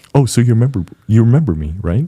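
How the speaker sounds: smooth, polished, businesslike professional interviewer voice. Imitating an interviewer from a past job interview: Rick Mombies impersonation. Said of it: "my Rick Mombies, uh, Momboys impersonation coming up".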